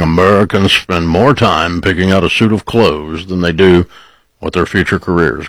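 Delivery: put-on deep baritone voice. Recalling a remembered saying, imitating a deep baritone voice. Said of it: "that deep baritone voice saying".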